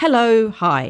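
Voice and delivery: bold, self-assured voice. Showing how to greet a stranger: really confident greeting. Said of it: "really confidently".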